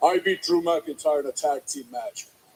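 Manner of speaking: low, stupid-sounding bragging voice. The speaker mocks Damian Priest's expected bragging, in a stupid mocking Damian Priest voice. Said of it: "That's a stupid voice".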